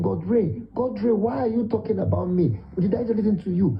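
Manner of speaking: put-on innocent little boy's pleading voice. Retelling what the little boy said about the video: imitating a little innocent boy. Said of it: "That's him".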